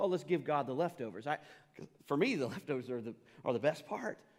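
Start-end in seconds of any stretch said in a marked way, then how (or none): none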